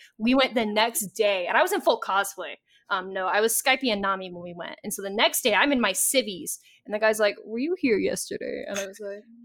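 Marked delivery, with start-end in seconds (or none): 7.4-8.6 put-on dignified, proper host voice. Quoting the guy at the sushi place, in a proper dignified voice. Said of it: "I like the proper dignified voice he gave".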